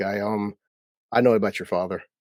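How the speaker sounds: ordinary talk, nothing marked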